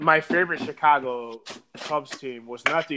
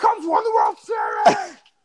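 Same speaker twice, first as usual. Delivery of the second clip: very high, loud, swooping hollered yell; 6 dB louder than usual. Speaker, chased by the bartender over an unpaid tab, retells yelling back. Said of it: "And I'm yelling back".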